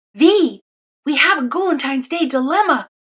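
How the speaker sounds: loud stage whisper. A narrator reads a boy suddenly appearing in the classroom with a warning, loud whisper. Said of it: "he whispers loudly".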